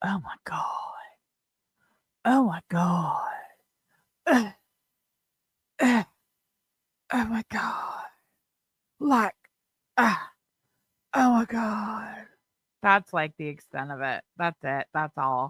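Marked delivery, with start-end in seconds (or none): 0.0-12.3 slow, drawn-out, exasperated groans of dismay. Imitating what someone keeps saying about the story: Beg Linda impression. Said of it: "my best, uh, Beg Linda impression".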